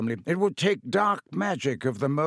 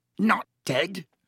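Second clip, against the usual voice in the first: choked, high-pitched words forced out; 6 semitones higher than usual. Told that she is not dead, a man answers, choking out the words. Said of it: "choked Filch".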